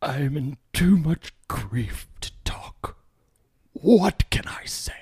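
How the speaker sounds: put-on high, very elderly old man voice. Speaker quotes his words to the New York Times after the fire, 85-year-old man voice. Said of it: "I sounded like I was an 85-year-old man".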